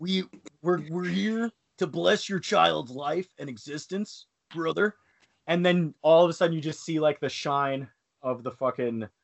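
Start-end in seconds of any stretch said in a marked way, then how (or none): 0.0-4.9 high, pitched-up Southern California hippie voice. Acting out the rabbi blessing the child: Randy Savage voice. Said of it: "this rabbi played by Randy Savage and Spider-Man".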